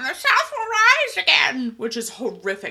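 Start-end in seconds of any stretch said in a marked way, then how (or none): 0.0-1.7 loud, shrill, very high-pitched squawk. Retelling what she says when she meets his mom, squawking the line out. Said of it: "she squawks out".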